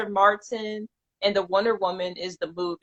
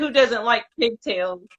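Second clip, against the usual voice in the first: plain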